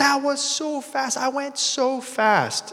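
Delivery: put-on very high, excited little kid's shout. A dad retelling his young child after the slide: imitating a child shouting. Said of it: "she's shouting at me like".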